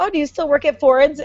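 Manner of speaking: Northern Michigan way of talking. Showing the way people in Northern Michigan say things, do a Northern Michigan accent. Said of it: "They just have this way of saying like".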